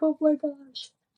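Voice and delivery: high, weepy, sobbing exclamation, acted out. Retelling the husband holding the newborn: imitating husband sobbing. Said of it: "my husband was just sobbing".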